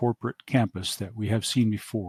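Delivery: plain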